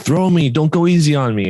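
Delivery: play-acted old man's voice, high, insistent, demanding yell. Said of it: "he was yelling at the guy".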